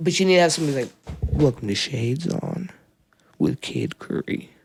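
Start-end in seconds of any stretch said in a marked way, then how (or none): 1.2-4.5 sexy, deep, slow, seductive baritone. Suggesting a cool show slogan for the other host, in a sexy deep baritone. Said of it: "in a sexy, deep baritone. All seductive".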